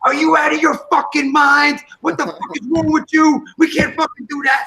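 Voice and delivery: play-acted, high-pitched yelling. Retelling a shouting match in a work meeting, re-enacting own yelling. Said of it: "And I'm yelling".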